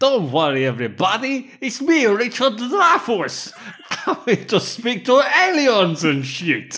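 very loud, shrill, high, swooping belted delivery. Quoting a film trailer line after the films are listed: Richard Dreyfuss impression. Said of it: "That was the trailer".

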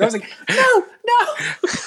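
put-on very high, shrill girlish shriek. Retelling a funny movie scene where a man's arm is grabbed; imitating a girlish shriek. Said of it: "he starts shrieking like, girl".

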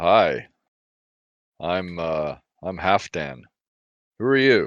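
trying-hard, charming tone. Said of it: "I'm trying to be charming".

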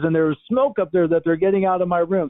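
put-on bright cheerful excitement. Retelling what a woman said after escaping a fire, quote her in an imitated excited happy voice. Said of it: "an excited happy voice".

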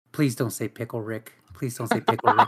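grumbled mutter, half to self. Showing what they mutter whenever Rick and Morty comes up, muttering under breath. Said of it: "mutter under my breath".

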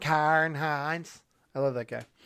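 horrible, bad, put-on Irish accent. Listing cast names, saying one like an Irishman. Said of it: "say it like an Irishman".

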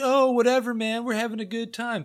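loose, easygoing hammered tone. Retelling how the drunk parents shrug things off: imitating drunk parents. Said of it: "they're hammered".

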